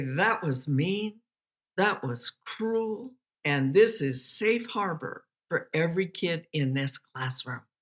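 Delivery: voice brought right down. A teacher retelling walking up to a student who mocked a classmate, lowered voice. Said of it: "lower my voice".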